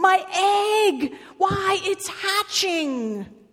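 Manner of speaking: very high-pitched, very slow, drawn-out yell. Narrator reading a story, a character sees his egg hatching: shouting. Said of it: "shouted Horton".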